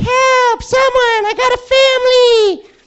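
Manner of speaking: very high, loud, squeaky little cry with drawn-out a. Retelling what a man at the house keeps saying, in an Alvin the Chipmunk voice. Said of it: "he sounds just like Alvin the Chipmunk".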